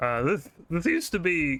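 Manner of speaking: voice breaking, cracking mid-phrase. Explaining what this area used to be, voice cracking. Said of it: "voice crack".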